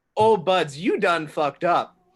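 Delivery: put-on smug, self-satisfied gloating jeer. Playing a character who smirks at goblins: smirking taunt in character. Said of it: "Traven smirks and says in Goblin".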